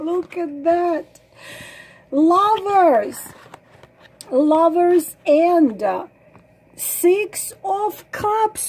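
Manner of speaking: choked up, nearly in tears. Turning over cards in a reading for viewers, about to cry. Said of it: "I'm gonna cry".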